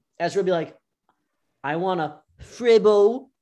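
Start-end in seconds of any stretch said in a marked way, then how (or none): 1.6-3.2 put-on very loud, very slow, screamed British accent. Retelling how a friend read menu items aloud at a restaurant: imitating Ezra's British accent. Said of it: "reading all the menu items in a British accent".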